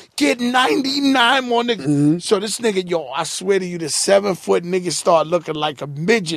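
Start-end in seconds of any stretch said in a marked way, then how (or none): 0.1-1.8 put-on scream, higher. Telling a story, re-enacting screaming at a man, retelling a scream.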